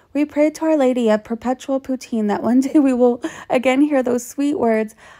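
plain

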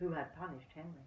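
ordinary delivery

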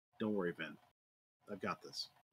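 hushed, soft, quiet, close-in half-whisper. Embracing a brother in the scene, reassuring him: quiet half-whisper. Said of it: "I'm gonna quietly whisper".

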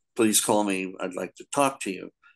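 ordinary delivery

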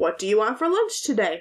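questioning intonation. Explaining punctuation marks with example sentences, asking a question.

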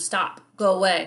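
ordinary delivery

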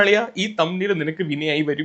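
ordinary talk, nothing marked

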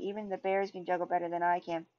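ordinary delivery

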